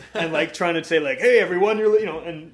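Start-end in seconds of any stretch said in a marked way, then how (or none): 1.2-2.2 very loud, high fake American DJ accent. Imitating a jamaican artist talking on his tracks, in a fake american dj accent. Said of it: "talking in this fake American accent".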